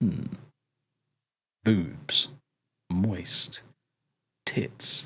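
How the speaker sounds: soft, breathy, put-on sultry whisper. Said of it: "How is my sexy voice now".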